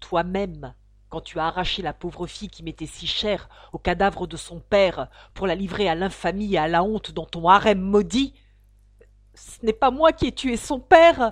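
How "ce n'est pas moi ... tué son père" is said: very loud, high, imploring, pleading. An accused man answers the narrator's accusation, imploring.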